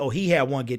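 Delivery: plain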